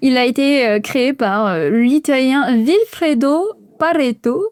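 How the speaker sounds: big put-on Italian accent. Explaining the Pareto principle to listeners, naming its creator in an Italian accent. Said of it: "avec mon super accent euh, italien".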